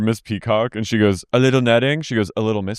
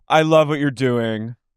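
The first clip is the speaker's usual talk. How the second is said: put-on drunk woman's voice, higher; 3 semitones higher than usual. Retelling how Lisa, wasted at a party, talked to charity people: imitating Lisa drunk. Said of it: "she's, like, wasted".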